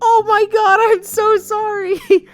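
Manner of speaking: acted horrified dismay. Retelling how she reacted to what she just said, mock horrified realization. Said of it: "the fucking horror of realizing what she just did".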